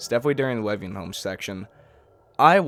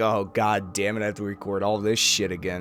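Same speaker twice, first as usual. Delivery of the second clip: normal talking voice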